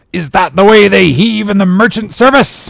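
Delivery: very high-pitched, furious, booming roar. Reading a story aloud, voicing a man's line to the men, roaring. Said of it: "he roared".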